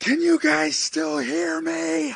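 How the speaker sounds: deafening, very high, shrill, rough scream. Narrator voicing an unseen voice calling to the group, screaming extremely loud. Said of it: "louder than anything you've ever heard in your life scream".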